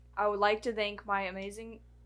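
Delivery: ordinary delivery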